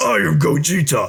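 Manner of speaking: rough, creaky, high, effortful character voice. Showing how the Vegeta voice from the video sounds: Vegeta impression. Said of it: "Vegeta's, I'm, like, actually trying".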